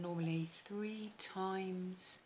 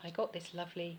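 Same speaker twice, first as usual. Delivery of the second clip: usual speaking voice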